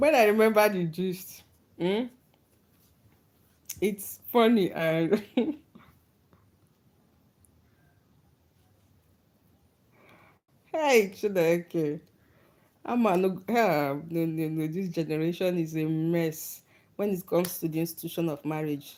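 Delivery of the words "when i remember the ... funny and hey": talking through laughter. Apologizing to viewers while recalling a funny story, laughing while talking. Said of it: "I'm laughing".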